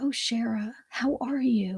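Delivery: easy, calm, composed and settled tone. Recalling her first New York client, the speaker imitates Birdie's calm voice. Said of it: "Birdie talked like this".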